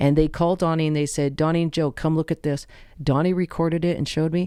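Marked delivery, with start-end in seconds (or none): none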